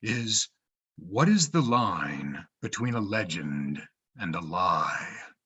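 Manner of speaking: eerie, spooky, low ghost-story delivery. Introducing the first big theme a work explores, in a spooky low voice. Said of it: "which I will try to say in as spooky and as low a voice as I possibly can".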